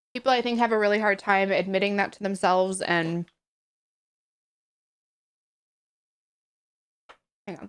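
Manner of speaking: talking with mouth full. Host talks to viewers about needing help while talking with mouth full. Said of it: "let me finish chewing".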